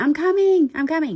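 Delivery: scared high yell. Retelling running downstairs while answering a call: retelling a yell. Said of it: "the whole time yelling".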